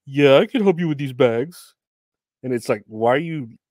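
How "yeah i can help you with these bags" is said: put-on, playful, teasing, needling delivery. Describing a man who always sounds teasing, imitating his reply in a teasing voice. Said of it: "he's constantly in that teasing voice".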